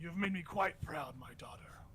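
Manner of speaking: slow, proud, whispered dark lord voice.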